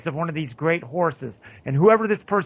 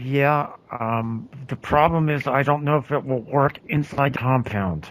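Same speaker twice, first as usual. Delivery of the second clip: muttered quietly under her breath; 4 semitones lower than usual. A player speaks a line as her character in the game, under her breath. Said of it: "she's going to say under her breath".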